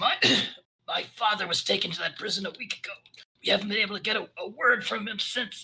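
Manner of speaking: very hoarse, raspy, high-pitched voice. Narrating a game, voicing the plague dwarf Dennis as he speaks up; very hoarse voice. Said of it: "he says in a very hoarse voice".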